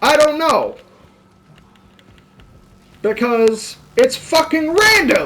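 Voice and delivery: shouting. Answering a question he hears his listeners asking, yelling. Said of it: "Sorry for yelling".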